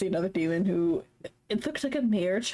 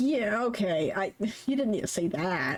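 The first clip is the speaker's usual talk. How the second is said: mock sad character voice. Voicing a character who looks sad about the talk: imitating a sad character. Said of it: "He looks so sad about it".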